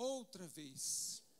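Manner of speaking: outra in outra vez stressed, stretched slowly, falling tune.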